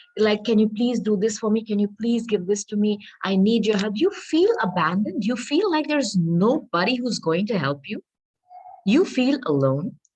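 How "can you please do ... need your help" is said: put-on imploring, begging plea. Acting out a figure on a tarot card: acting out begging. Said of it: "in this energy of begging someone".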